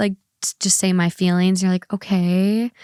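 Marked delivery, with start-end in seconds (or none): 1.9-2.7 put-on exasperated tone on okay. Imitating how the other speaker answers feelings: imitating an exasperated okay. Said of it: "you sound a little exasperated with me".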